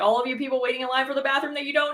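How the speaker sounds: imitated sarcastic tone. Retelling what was said to a bathroom line: retelling a sarcastic remark. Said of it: "very sarcastic when I said that".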